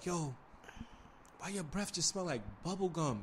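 very hushed, very quiet whisper. Retelling what a friend whispered to a woman: imitating someone whispering.

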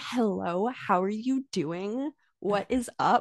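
heavily exaggerated, as-American-as-possible accent. Retelling how she spoke while trying really hard, in an exaggerated American accent. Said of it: "was just like as American as possible".

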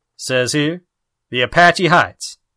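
ordinary delivery

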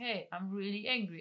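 ordinary delivery

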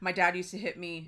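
flat, dead monotone, no inflection. Imitating someone meant to sound rushed and scared: flat monotone. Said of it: "he's just very monotone. Like, he's just like".

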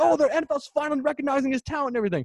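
high, fast, excited freaking-out gushing. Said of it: "He's freaking out like".

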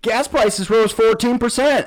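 very high, sudden, blurted-out yell. Recapping a tag match, quoting a line someone randomly yelled out, retelling a yell. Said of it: "King just randomly yells out".

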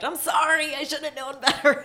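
loud shout. Retelling a man shouting at the judge while being arrested: imitating someone shouting. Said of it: "shouting at the judge".

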